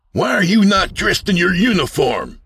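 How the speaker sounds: piercing, very high, shrill shout. A narrator reads a character confronting another at an opened door; shouting. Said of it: "Sid shouted".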